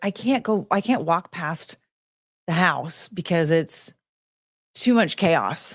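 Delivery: plain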